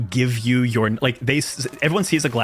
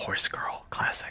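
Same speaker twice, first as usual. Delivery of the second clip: barely audible whisper under the breath. A character looks at everyone, then remarks under her breath: muttered under her breath. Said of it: "just kind of goes under her breath".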